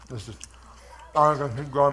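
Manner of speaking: speech through mouthful of food. Eating something and refusing to share it with you guys, talking with mouth full. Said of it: "I'm talking with my mouthful".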